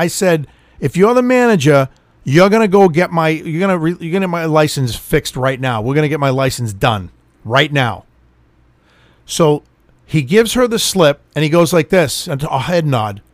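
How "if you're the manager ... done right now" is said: ordinary talk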